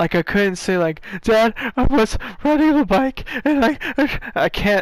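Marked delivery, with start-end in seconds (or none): 1.2-4.8 high, tearful, hyperventilating crying speech. Retelling being too shocked to explain an arm injury to dad: imitating own crying voice. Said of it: "In that crying voice?".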